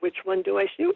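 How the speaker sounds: normal talking voice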